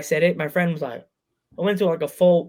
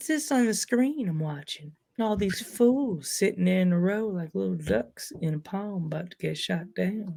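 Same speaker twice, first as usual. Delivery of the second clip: soft, slow, drawn-out old cartoon man voice; 9 dB quieter than usual. Commenting on people seen on a screen, Family Guy old man voice. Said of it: "You sound like guy, the guy from Family Guy now".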